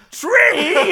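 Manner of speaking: high shout right up close. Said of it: "and shouted".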